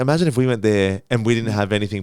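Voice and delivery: ordinary delivery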